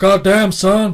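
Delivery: loud, high wrestler shout. Trying the wrestler impression again, a bit better: Stone Cold Steve Austin impression. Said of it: "That's a bit better into it".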